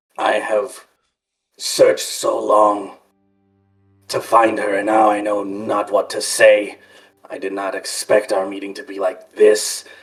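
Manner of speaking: low, forced-out words. A storyteller voices a character at a meeting, lowered voice forcing words out. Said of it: "he lowers his voice and sort of forces the words out".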